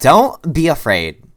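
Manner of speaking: very loud, very high, sassed-up woman's voice. Game master redoing a woman's line to the player, in a sassy woman's voice. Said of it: "let's just sass it up".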